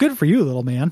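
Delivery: put-on condescending voice. Imagining what Davey says about a game puzzle: imitating Davey being condescending. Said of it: "You can almost hear Davey saying".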